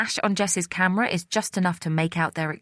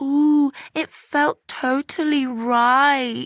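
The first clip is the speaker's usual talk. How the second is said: very slow, high, loud, taunting mocking voice; 8 semitones higher, 5 dB louder than usual. Narrator reads a quarrel; one sister mimics the other: mimicking in high-pitched voice. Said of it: "she mimics in a high-pitched voice".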